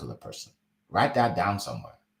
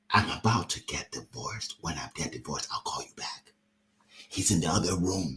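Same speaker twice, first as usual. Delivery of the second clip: soft, hushed, secretive, confiding stage whisper; 5 semitones lower, 5 dB quieter than usual. Retelling what a lady said on a Zoom call: imitating a half-whisper. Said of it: "she whispers in the Zoom".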